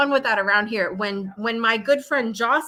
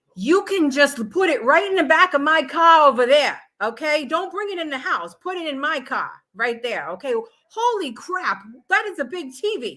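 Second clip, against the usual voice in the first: put-on very thick, heavy Italian accent, laid on thick; 4 semitones higher than usual. Quoting a man as they take his order out, very thick italian accent. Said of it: "Like the very thick Italian accent".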